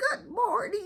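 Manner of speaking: put-on disguised elderly woman voice, pitched very high. Retelling disguising one's voice on a phone call: 85-year-old lady voice. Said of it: "I made myself sound like an 85-year-old lady".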